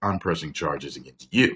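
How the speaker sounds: ordinary delivery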